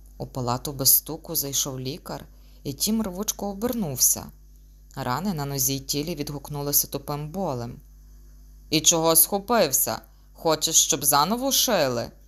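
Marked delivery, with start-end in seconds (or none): 8.7-12.1 sullen, gloomy, rising tone. Narrating a doctor speaking to his patient, gloomily asked. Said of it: "похмуро поцікавився чоловік".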